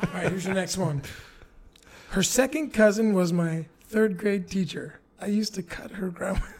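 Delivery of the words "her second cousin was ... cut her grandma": words broken up by laughter and giggles. Reading a quiz line aloud, laughing while reading. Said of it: "I'm laughing".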